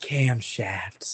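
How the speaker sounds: loud, theatrical whisper. Retelling a movie scene on the phone: imitating Megan Fox whispering. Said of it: "Megan Fox whispers into the phone and goes".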